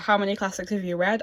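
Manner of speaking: usual speaking voice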